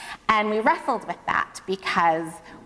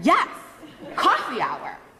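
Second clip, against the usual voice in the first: put-on adamant, emphatic, high, swooping little kid voice; 5 semitones higher than usual. Retelling a five-year-old's answer to a grown-up: imitating a child saying it very loudly. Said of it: "she goes very loudly".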